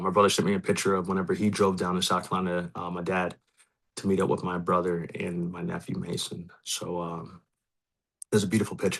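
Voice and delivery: choked-up voice catching with emotion. Talking about his dad and a picture his brother sent him, choked up. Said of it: "I didn't think I was gonna get choked up".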